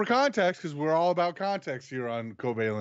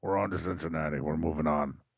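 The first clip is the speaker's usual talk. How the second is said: very deep, low-pitched demonic voice; 12 semitones lower, 4 dB quieter than usual. Insisting that's how the coach sounded, the speaker does a Bill Belichick impression like a demon. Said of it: "you sound like a demon".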